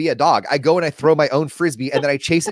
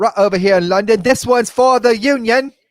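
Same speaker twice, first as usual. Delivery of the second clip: put-on English accent, raised and pitched up; 7 semitones higher, 5 dB louder than usual. Acting out a Civil War reenactor in England, English accent. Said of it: "I got to get an English accent".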